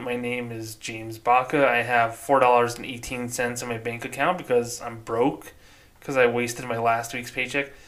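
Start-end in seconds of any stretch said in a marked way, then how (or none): none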